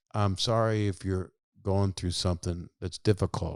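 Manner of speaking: usual speaking voice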